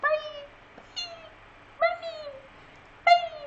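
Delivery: very high, faint, drawn-out dying bunny voice. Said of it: "Sound like a dying bunny".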